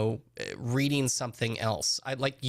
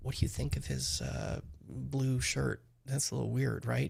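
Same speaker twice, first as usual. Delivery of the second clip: put-on whisper, quieter; 5 dB quieter than usual. Imagining someone whispering next to him at a big in-person event: imitating Nancy whispering. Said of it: "Nancy next to him who's whispering".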